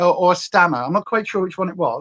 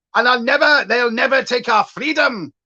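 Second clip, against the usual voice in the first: bad put-on Scottish accent, pitched high; 5 semitones higher than usual. Mocking people who put on a ginger wig and tartan: bad Scottish accent. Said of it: "which was such a bad accent".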